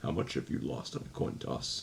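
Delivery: deep, low, disturbing whisper. Praising the actor who played Anton Chigurh, quoting him in Anton Chigurh's deep, disturbing voice. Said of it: "dis- disturbing voice".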